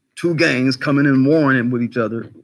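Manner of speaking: ordinary talk, nothing marked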